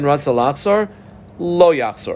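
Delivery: ordinary talk, nothing marked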